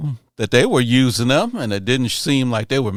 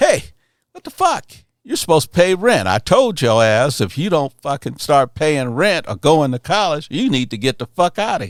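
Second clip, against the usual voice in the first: mock, high, pissed-off dad voice, ranting; 5 semitones higher than usual. Retelling being told off over missed rent: imitating an angry father. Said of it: "he was pissed".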